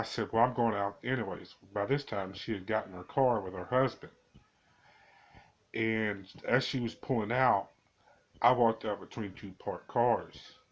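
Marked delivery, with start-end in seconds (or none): none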